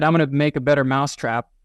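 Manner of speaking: ordinary talk, nothing marked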